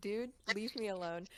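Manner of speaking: ordinary delivery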